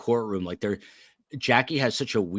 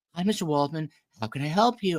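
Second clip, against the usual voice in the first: mock feigned sweet kindness, pitched up; 7 semitones higher than usual. Retelling a call to a customer service person: imitating a fake sweet voice. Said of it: "fake wannabe sweet".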